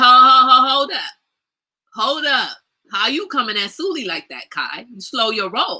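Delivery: slow, drawn-out protesting by a group. Retelling how everyone at the table would object: imitating others at the table objecting. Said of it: "everybody else at the table be like".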